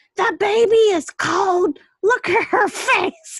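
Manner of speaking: shrill, very high screeching scream. Retelling how a visitor greeted her at the door, imitating someone screaming.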